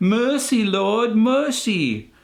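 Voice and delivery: bad fake English accent, pitched very high. Imagining a man pleading before a king in a throne room, bad English accent. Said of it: "Sorry, bad English accent".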